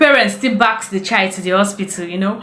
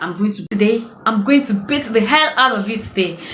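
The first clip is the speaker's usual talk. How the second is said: furious, angry voice. Retelling threatening her daughter: imitating her own angry threat. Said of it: "I got so angry".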